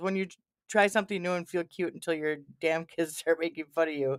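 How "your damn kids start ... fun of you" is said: ordinary talk, nothing marked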